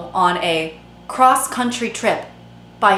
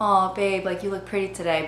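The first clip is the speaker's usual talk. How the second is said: gentle, softened, soft everyday voice; 6 dB quieter than usual. Recalling being in love, showing the voice used instead of baby talk: softer tone of voice. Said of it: "I would use a softer tone of voice".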